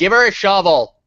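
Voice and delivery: loud, high-pitched shouting. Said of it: "I'm gonna shout".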